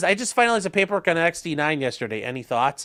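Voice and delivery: ordinary talk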